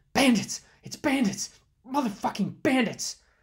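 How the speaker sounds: high, loud, breathless gasping yell. Narrating a story, a palanquin bearer turns to the woman he carries, yelling breathlessly. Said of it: "yelled breathlessly".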